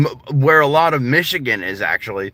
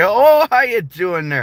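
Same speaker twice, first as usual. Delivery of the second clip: put-on polite Canadian accent, pitched up; 7 semitones higher than usual. Describing how people picture Canadians, the speaker mimics them: stereotypical Canadian accent. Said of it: "people think of Canadians as like".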